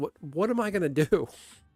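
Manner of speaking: put-on frantic, high, freaked-out panicked cry. Telling a wrestling story, the speaker acts out Bret Hart freaking out in mock panic. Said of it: "Brett's like freaking out".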